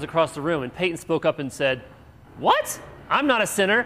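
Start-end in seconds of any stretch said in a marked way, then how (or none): 2.4-3.9 put-on high, loud indignant little girl voice. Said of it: "Peyton was so indignant".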